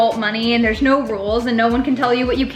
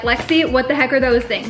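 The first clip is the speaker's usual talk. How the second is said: normal talking voice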